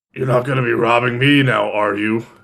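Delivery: scowling, glowering tone. A character scowls down at the kobold who robbed him on the road, scowling. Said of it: "kind of like scowls at the kobold".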